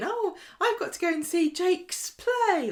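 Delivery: put-on, very high, very slow, innocent tone. Retelling a TV scene where Gary says something: imitating an innocent tone. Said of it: "innocently going".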